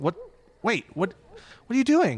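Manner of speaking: startled, confused panic.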